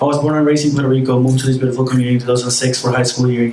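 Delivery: rushed, too-fast rattling speech.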